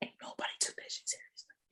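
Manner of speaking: secretive, hushed whispered aside. Recounting what happened to someone to a listener, whispering. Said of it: "I'm whispering because it's like crazy".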